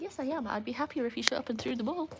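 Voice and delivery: voicing a pet dog. Answering for the dog asked if she is happy: voicing the dog. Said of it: "She's like".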